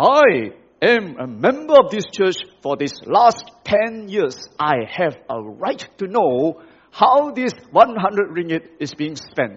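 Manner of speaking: firm, loud, insistent voice. A church member stands up to question the mission team; firm and loud. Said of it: "in a very firm and loud voice".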